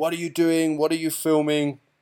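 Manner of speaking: mock commanding-officer shout, mild and held in check. Speaker recounts a commanding officer shouting at them for filming; imitating someone shouting. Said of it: "he was shouting at me".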